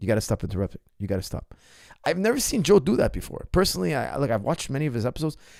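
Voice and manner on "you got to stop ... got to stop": angry, fed-up, cutting tone. Retelling a podcast host telling a guest to stop interrupting: imitating angry Joe Rogan. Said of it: "you could see Joe getting angry".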